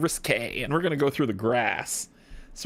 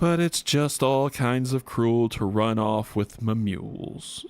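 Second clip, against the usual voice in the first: put-on gloomy donkey voice, lower pitch; 3 semitones lower than usual. Voicing a dejected merchant who lost his goods: Eeyore voice. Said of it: "put on my Eeyore voice".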